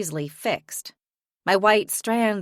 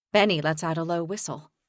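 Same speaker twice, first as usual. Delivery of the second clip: plain reading voice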